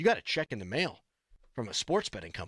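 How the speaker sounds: excited news announcer voice, swooping pitch. Retelling how a wife announced a check in the mail: imitating wife's excited voice. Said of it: "my wife got all excited".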